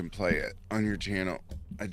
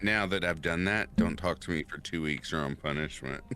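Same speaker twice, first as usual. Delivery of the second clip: ordinary delivery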